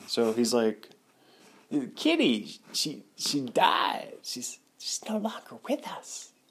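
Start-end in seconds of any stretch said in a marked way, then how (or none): 1.9-6.3 whispered put-on voice, higher, quieter, slower. Trying out an impression of him talking to a kitty, do Christopher Walken whispering. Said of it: "Let me try to do a Christopher Walken whispering".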